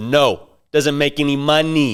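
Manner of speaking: slow, condescending, dismissive talking down. Retelling how a wedding guest shot down a question: imitating a condescending tone. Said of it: "in a very condescending way".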